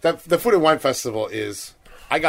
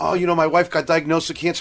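put-on weepy, blubbering, tearful sobbing; 3 semitones higher than usual. Retelling what a crying man at the festival said: imitating a crying man. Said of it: "he's crying".

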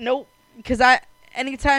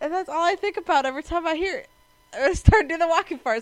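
ordinary delivery

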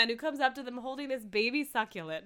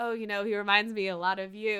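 ordinary delivery

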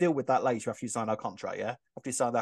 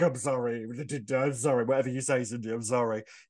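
mock grovelling, scared, cowering tone. Retelling how Vinny cowers when Cindy corners him: imitating a scared, apologetic Vinny. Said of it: "he's instantly sort of like".

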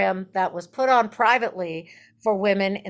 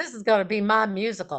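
put-on Texas accent, plain flat delivery. Retelling the night a guest from Texas turned to them: Joe Lansdale's Texas accent. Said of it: "in his Texas accent".

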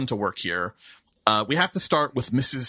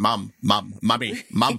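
put-on very slow, drawn-out, insistent repeated cartoon-kid calls; 3 semitones lower than usual. Comparing someone's repeated calling to a cartoon scene: Stewie from Family Guy voice. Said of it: "it's like Stewie and Family Guy".

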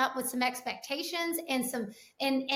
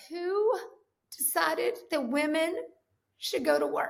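acted slow, halting bawling with words broken by sobs; 3 semitones higher than usual. Retelling a crying woman's line from an Instagram video: imitating someone bawling. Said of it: "And she's bawling".

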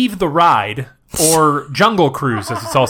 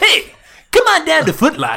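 very high, sing-song, swooping sales pitch voice; 13 semitones higher than usual. Joking that a ride projection is an ad: Foot Locker advertisement pitch. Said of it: "some guy wearing a referee shirt being like".

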